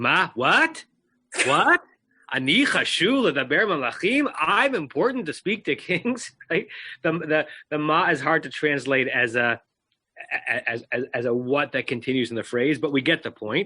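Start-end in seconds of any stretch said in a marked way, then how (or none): 0.0-6.3 Yiddish lilt and intonation, pitched up. Reading a hebrew verse aloud to show how it sounds, with yiddish intonation. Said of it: "read it like with a Yiddish intonation".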